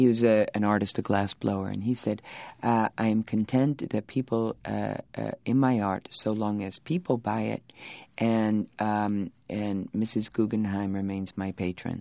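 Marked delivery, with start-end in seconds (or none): none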